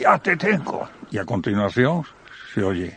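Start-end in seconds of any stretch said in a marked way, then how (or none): 0.0-0.9 mock terrible, high, menacing tone. Reproducing a female voice from a recording, imitating a threatening tone. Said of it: "en un tono peor, todavía peor".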